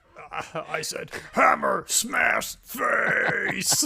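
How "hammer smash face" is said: death metal growling vocal style. Joking how Batman answers her question: death metal growling vocals. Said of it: "go full death metal, growling vocals".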